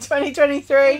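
talking through laughter. Giving the date at the start of a video, laughing while talking. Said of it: "I'm laughing because".

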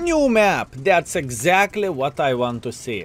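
sarcastic, swooping sing-song delivery. A streamer reacting to a new game map, sarcastic. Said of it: "I'm being sarcastic".

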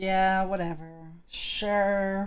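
bored, flat monotone. Retelling how she answered when asked to meet, imitating a bored reply. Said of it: "She sounds so bored. She's like".

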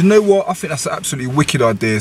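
ordinary delivery

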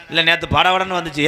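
ordinary delivery

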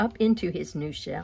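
ordinary delivery, nothing marked

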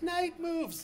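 stupid little voice, soft and high.

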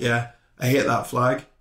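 ordinary talk

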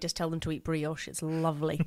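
soft half-whisper, close into the ear. Acting out half-whispering advice into someone's ear: mock half-whisper. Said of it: "Whispering in her ear".

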